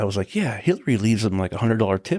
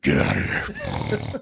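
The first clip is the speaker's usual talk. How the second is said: put-on mean snarl, slow and very drawn out; 7 semitones lower than usual. Retelling how the acting coach treated kids: imitating a snarl. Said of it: "snarl at kids".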